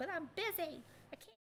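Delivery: put-on high, girly cartoon child voice. Speaker retells answering his upset kids after work, in a girly Cartman voice. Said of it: "a girly Cartman".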